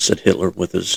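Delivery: plain reading voice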